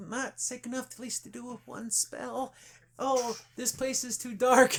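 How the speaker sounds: high, slow, drawn-out, sweet little voice. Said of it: "he has a sweet little voice".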